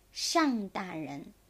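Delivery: ordinary delivery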